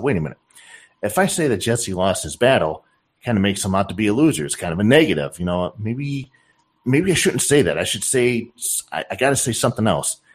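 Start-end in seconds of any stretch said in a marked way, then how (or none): none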